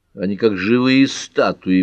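ordinary delivery

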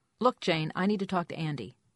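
plain

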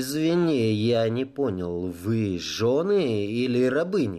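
plain

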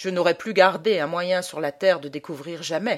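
plain reading voice

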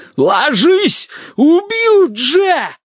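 hoarse, very high shriek of panic. A narrator voices a father yelling at Vitka, in a hoarse panicked shout. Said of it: "хрипло, с паникой в голосе заорал".

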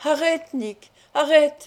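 high, strangled cry, voice choked with terror. Seeing his companion hoisted above the ground, he cries out in a voice strangled by fear. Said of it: "d'une voix étranglée par les affres de la peur".

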